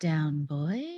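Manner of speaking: muttered under breath. Voicing a character muttering to someone behind her: under her breath. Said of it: "under her breath".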